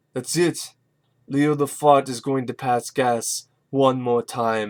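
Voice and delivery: flat, deadpan, dead straight delivery. Quoting a goofy movie line he likes: Arnold deadpan delivery. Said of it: "really does work 'cause of Arnold's deadpan".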